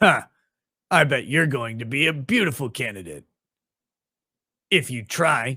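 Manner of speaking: emotionless, awkward anime-dub delivery with odd pauses. Mocking the English dub of a Brazilian show, 3% English dub voice. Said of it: "It sounds embarrassingly like an anime".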